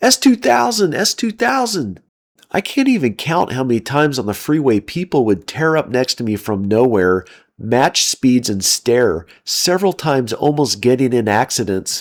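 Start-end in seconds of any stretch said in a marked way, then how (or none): 0.0-2.0 high-pitched screaming at full volume. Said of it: "screaming at the top of her lungs".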